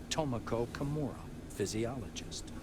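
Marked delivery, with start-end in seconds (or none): none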